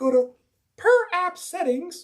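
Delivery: put-on booming, very high, loud girl announcer voice. Walking someone through phone accessibility settings, in a girl announcer voice. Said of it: "I gotta have that that girl announcer voice".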